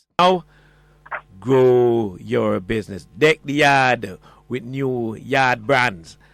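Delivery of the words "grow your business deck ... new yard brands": English-accented patois delivery, growing drawn out. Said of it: "I hope I did that patwa in an English accent thing".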